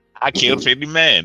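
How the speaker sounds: put-on old man voice with Texan accent. Quoting a character after another speaker names him: Cotton Hill voice. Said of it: "Cotton Hill mentality".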